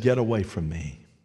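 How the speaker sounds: put-on deep, low voice. Retelling a deliverance, quoting the voice that came from a possessed woman: imitating a deep voice. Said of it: "A deep voice said".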